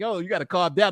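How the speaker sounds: plain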